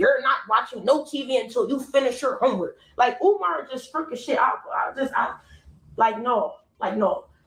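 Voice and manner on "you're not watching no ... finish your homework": put-on stern voice. Retelling being told to finish homework before TV: imitating Umar being stern. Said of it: "Umar being stern as shit".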